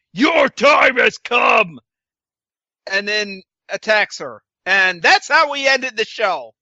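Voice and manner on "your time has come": slow, put-on masculine voice. Retelling a scene where a character appears behind someone: imitating a manly voice. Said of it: "in a g-, manly voice says".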